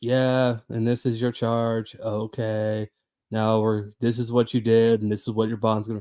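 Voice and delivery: droning, flat monotone male Kansas voice. Speaker imitates how the male Kansas judges talk, monotone male judge impression. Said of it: "every guy judge is extremely monotone".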